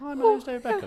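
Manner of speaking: very high-pitched, teasing voice. Showing how people mocked his voice: mocking David Beckham voice. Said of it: "everyone's taking the mickey out of his voice".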